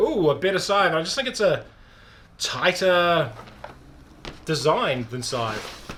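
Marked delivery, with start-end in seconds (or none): none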